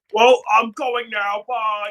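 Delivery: very slow, affected fake voice. Retelling how a character disguised himself: imitating a put-on deep voice. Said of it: "tried to make his voice deep".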